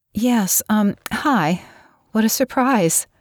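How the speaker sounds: very slow, nervous, bright, rising cheerful tone. A woman answers an unexpected phone call, her voice rising cheerfully. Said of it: "She laughed nervously. Her voice rose cheerfully".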